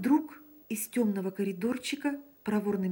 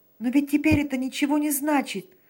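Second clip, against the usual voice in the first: animated, lively interjection, raised and pitched up; 6 semitones higher, 7 dB louder than usual. Emil picks up quickly after his confession to Sanin, lively. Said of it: "подхватил он с живостью".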